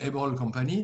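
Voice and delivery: heavy French-accented English.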